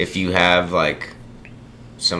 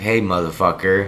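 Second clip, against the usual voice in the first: ordinary talk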